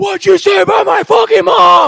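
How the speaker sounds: raw, shrill, rasping, very loud, very high, drawn-out scream. Retelling a player's reaction to a taunt: imitating someone screaming.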